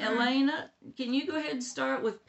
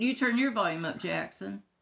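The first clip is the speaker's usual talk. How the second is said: ordinary talk, nothing marked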